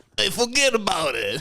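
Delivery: very high-pitched put-on Italian accent. Asked to finish the podcast with a phrase, in an Italian accent. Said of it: "saying a forget about it in an Italian accent".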